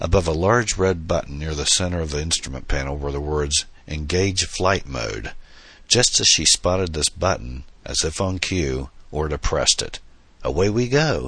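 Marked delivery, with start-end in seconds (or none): 10.4-11.3 called-out exclamation, higher pitched. Pressing the Engage Flight Mode button, he exclaims. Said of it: "he exclaimed".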